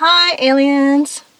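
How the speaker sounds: put-on high, slow, loud little boy voice.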